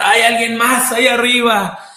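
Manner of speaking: desperate high-pitched yell.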